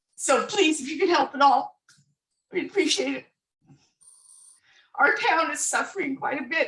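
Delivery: choked-up emotional pleading.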